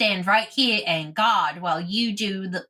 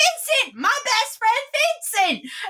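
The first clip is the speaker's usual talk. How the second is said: very high, swooping, eager, excited voice. Running across the room toward a friend: excited call across the room. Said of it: "and she runs across, and she's like".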